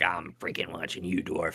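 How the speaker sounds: menacing, hostile, hissing snake voice. Voicing a hostile snake glaring at a dwarf: hostile snake voice. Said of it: "he's like".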